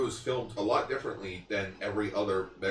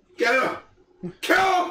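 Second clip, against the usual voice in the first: put-on scared general yelling, higher and louder; 11 dB louder than usual. Retelling how a scared general ordered his men: imitating Kubar's fearful yell. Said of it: "you felt fear in his voice".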